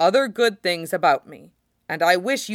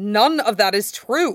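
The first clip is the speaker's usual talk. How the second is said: sharp, cutting delivery with an edge; 3 semitones higher, 3 dB louder than usual. Narrator reads Sid answering Gino's self-criticism: sharply. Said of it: "Sid says sharply".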